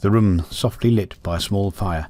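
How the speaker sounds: ordinary delivery, nothing marked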